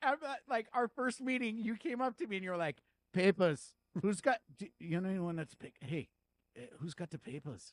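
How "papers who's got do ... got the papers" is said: bad, terrible put-on Indian accent. Retelling what the listener said when they first met, in a terrible Indian accent. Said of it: "Did I sound like uh, an Indian man?".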